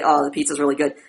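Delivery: low, flat, toneless, unvaried monotone. Showing the routine way people praise the pizza under social pressure: flat monotone. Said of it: "get into your monotone voice routine and say".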